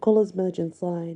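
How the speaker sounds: ordinary delivery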